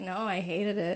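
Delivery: put-on sad voice. Retelling a woman's answer to an interviewer about her makeover, imitating her sad reply. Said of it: "And then she was so sad".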